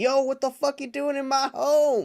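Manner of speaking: shrieking monster yell, very high and loud. Retelling a movie fight scene, imitating Godzilla screaming. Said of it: "Godzilla screams at him like".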